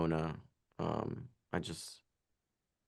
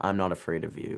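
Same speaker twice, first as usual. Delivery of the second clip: ordinary delivery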